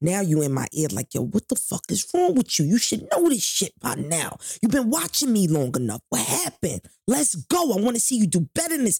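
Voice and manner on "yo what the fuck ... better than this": harsh, swooping drill-sergeant voice. Retelling how a man at work got close and spoke to them, imitating a drill sergeant. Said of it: "He was talking to me like a drill sergeant".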